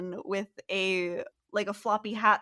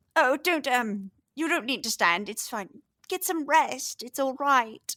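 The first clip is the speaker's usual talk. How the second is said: put-on elderly lady voice; 3 semitones higher than usual. A game narrator voices a woman coming through the door, in an old woman's voice. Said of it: "you hear an old woman's voice go".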